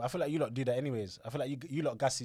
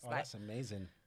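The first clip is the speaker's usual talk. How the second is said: dry, sarcastic tone; 6 dB quieter than usual. Reacting to hearing that toilet conversations are great: sarcastic. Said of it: "why are you being sarcastic?".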